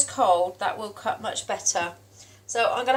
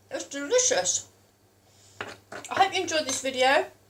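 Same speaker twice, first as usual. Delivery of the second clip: mouth full of food, pitch raised slightly; 6 semitones higher than usual. Speaker closing a food video to viewers, talking with mouth full. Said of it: "Sorry for talking my mouth full".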